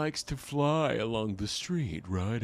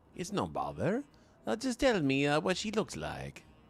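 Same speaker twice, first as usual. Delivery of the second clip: put-on boyish voice, higher; 5 semitones higher than usual. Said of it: "so this is the boy voice".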